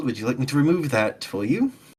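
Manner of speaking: quiet, hushed, low-key words under the breath. A player's character quietly offers to remove Cordelius's manacle while acting natural, talking really quietly. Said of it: "Just talking really quietly".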